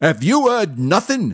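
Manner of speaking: high-pitched, loud shout. A narrator reads a man raising his voice to a woman, shouting. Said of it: "shouted the man".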